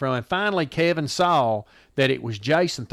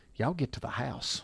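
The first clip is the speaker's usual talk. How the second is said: hushed, very quiet, almost whispered; 11 dB quieter than usual. Retelling what Daddy said after falling over the fence: imitating a near whisper. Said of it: "he's almost whispering".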